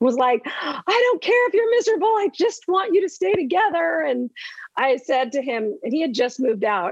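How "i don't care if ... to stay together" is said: very high, shrieking, screaming outburst. Retelling the older daughter's outburst after school: imitating a daughter screaming. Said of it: "was screaming".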